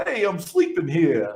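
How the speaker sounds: put-on thick New York accent. Parent retelling his eleven-year-old son's reply this morning, in new york accent. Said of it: "that sounded very New York".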